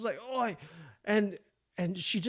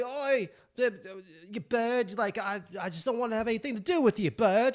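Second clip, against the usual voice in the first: put-on Australian accent sliding into English; 3 semitones higher than usual. Retelling what an Australian at a surfer bar said: imitating an Australian accent. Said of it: "I sound like an English fucking Australian".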